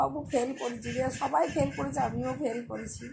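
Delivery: plain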